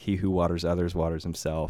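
ordinary delivery

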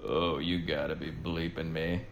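put-on under-breath mutter. Speaker quoting a man's catchphrase from a clip, imitating muttering under breath. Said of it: "under his breath type of thing".

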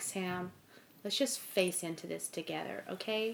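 put-on hushed, soothing, calm New York accent. Quoting what an American companion said to her: imitating a calm New Yorker. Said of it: "He speaks like a very calm New Yorker".

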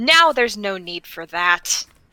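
motherly, unbothered, unimpressed telling-off voice. Recounting staring something down, in a best mom voice. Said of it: "my best uh like mom voice".

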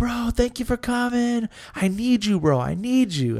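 put-on high, drunken bro voice. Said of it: "He's way drunk".

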